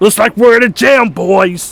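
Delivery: loud cartoon crocodile voice. Recalling an impression from a video, the speaker repeats the line: Vector impression. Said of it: "I was able to do a decent Vector impression".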